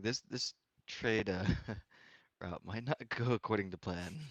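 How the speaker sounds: put-on whisper. Whispering in character to another player so no one else hears: whispering in character. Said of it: "I kinda whisper to".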